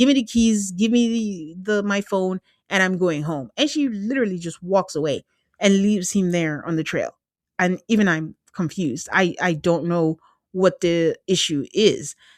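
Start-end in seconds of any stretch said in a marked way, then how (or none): none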